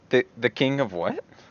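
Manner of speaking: rising questioning tone. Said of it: "kind of, like, questioningly".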